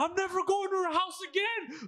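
play-acted, very high, shrill yelling rant. Retelling a scene at a cafe, quoting the guy while imitating him yelling. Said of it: "And he's yelling".

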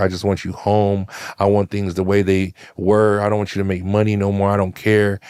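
put-on tearful, pleading crying speech. Retelling what a girl said on the phone, imitating someone crying on the phone. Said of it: "and she's crying".

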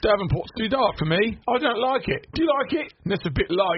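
put-on full British accent. Retelling what was said on the couch, in a full British accent. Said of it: "you're full force British".

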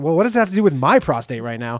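ordinary talk

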